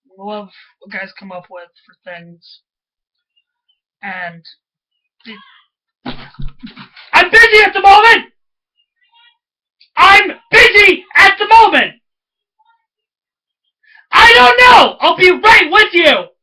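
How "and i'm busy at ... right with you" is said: very loud, high-pitched, drawn-out yelling. Mid-recording, the speaker calls out to someone who wants attention; yelling. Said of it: "Sorry about the yelling".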